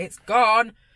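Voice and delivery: loud shout. Retelling trying to get a coworker's attention over noise: imitating own shout. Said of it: "Trying to, like, shout at her".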